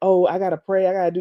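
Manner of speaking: mock sanctimonious preacher-style way of talking. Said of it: "she just kept talking like that".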